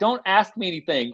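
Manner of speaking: put-on high laughing and crying at once, voice cracking. Retelling a broadcast moment, speaker quotes words to Tom Hudson, imitating crying while laughing. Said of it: "I'm kind of crying, laughing. I go like".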